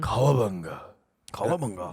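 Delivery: epic, very low, soft deep voice.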